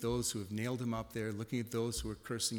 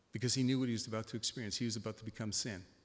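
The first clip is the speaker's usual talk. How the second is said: ordinary talk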